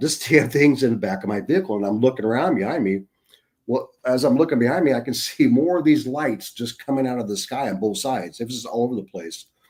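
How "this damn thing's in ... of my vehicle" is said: normal talking voice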